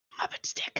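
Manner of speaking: hushed, very quiet whisper. Repeating a phrase back to another player: whispering. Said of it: "Why are we whispering?".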